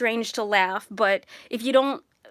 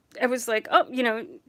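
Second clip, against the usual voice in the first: ordinary talk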